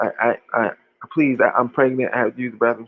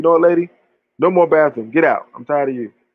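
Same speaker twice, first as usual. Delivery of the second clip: mock angry outburst, higher pitch; 4 semitones higher, 4 dB louder than usual. Retelling how the gas station clerk got mad at a customer: imitating an angry clerk. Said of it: "And he got mad".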